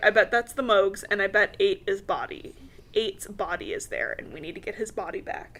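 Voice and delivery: plain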